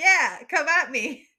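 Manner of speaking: very loud, taunting, challenging yell. A player's character steps back across the room and calls out, yelling. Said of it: "As I'm yelling at it, going like".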